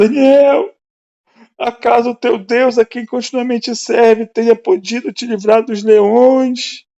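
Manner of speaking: very high, loud, acted grieving cry. Retelling how the king called out to Daniel, acting out a sad cry. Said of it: "com voz triste".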